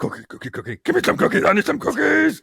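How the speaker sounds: hyperactive, wound-up, manic character voice. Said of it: "you sound like you've taken more drugs and you're hyperactive".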